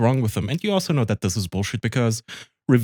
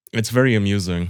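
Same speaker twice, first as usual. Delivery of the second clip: ordinary delivery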